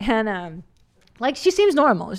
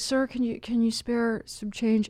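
mock begging, put-on and quieter; 6 dB quieter than usual. Retelling how a man begging for money asked for change, imitating someone begging. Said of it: "he was like begging for money".

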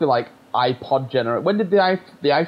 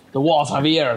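really bad, clumsy, put-on French accent. Retelling acting a school play line as a rat detective: imitating a bad French accent. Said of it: "Like a really bad French accent".

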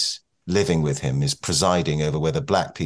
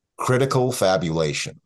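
put-on American accent; 4 semitones higher than usual. Quoting a term she uses, said the American way: American accent. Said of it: "it's so American, I have to say it in American".

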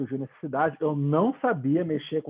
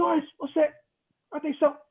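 higher-pitched shouting; 13 semitones higher than usual. Retelling how a fellow crew member started yelling over the intercom: imitating someone shouting. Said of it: "ele começou a gritar".

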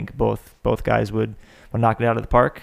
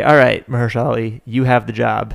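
ordinary delivery

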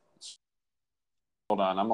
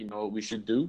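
put-on spoken in a New York accent. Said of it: "they were like".

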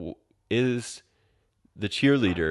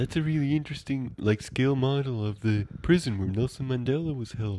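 higher, soft put-on stoner voice. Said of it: "He's like".

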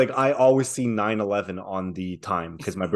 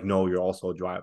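plain

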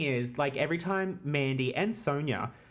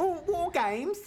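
put-on British accent, pitched way up high. Joking about how the event name is said: put-on british accent. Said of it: "isn't it British?".

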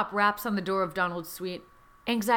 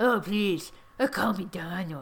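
badly done, purring put-on host voice. Reading a story aloud, voicing the character inviting you in: awful Donald Trump impression. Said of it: "your impression is so awful".

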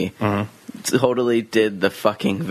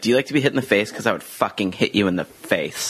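ordinary talk

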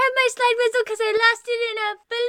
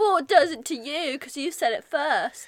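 bad, clumsy fake put-on British accent; 8 semitones lower than usual. Bickering over who said a word first, in a bad British accent. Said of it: "We have really bad British accents".

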